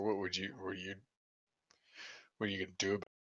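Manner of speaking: very quiet, barely audible half-whisper under the breath. Speaking in character as someone walks away: half-whispering under breath. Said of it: "I just whisper".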